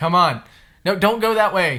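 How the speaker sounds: loud, high-pitched, exasperated calling.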